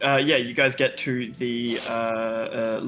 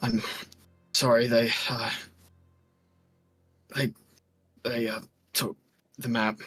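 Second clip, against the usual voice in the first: wheezing, wheezy voice. Narrator voicing a wounded curator lying covered in blood, wheezing out. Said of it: "he sort of wheezes out".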